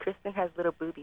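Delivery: hushed, very soft, put-on girly voice. Egged on by friends to improvise, doing a put-on chick voice. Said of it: "Do the chick voice".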